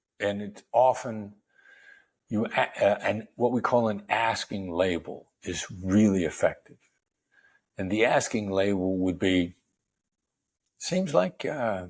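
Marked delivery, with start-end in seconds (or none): 10.8-11.9 calm, easy, no-pressure, reassuring tone. Demonstrating an asking label, said in a reassuring it's-okay tone. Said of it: "Like that. Like it's okay".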